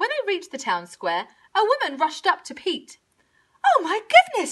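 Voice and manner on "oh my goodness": effusive, gushing, pitched way up high. Narrator reads a woman rushing up to a man in the town square: gushing. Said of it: "she gushed".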